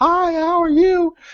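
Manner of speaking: very high, affected voice lifted into high register. Recalling how they talked while in rehab, in a Betty Boop voice. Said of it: "my voice was high and slow".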